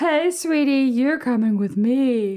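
character voice, lifted high. Asked by another speaker for a character impression: female Banana Guard voice. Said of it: "Give me an impression of a character".

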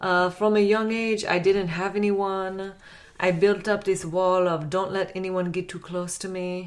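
comic put-on Russian accent. Voicing a woman's words about not getting vulnerable, put-on Russian accent. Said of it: "Y'all ready for my Russian accent?".

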